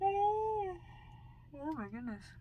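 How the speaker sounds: talking through a very high, drawn-out yawn. Talking to the listener about cooking, yawning while speaking. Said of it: "I am so sorry for yawning right in your face".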